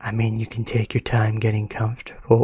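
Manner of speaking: unsettling, eerie, sinister, friendly-sounding voice. Reading a friendly voice's line aloud in a story: creepy voice. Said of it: "Why am I making it sound creepy?".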